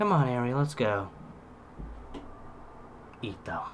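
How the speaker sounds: very quiet, breathy, hushed whisper, barely voiced. Recapping a scene, speaker acts out a character's line, retelling a whisper. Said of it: "he whispers".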